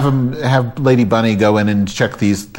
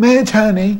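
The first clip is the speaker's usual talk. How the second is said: woman's voice, pitched very high; 11 semitones higher than usual. Retelling a night phone call, doing the caller's voice: imitating a woman's voice. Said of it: "I'll do her voice if I can".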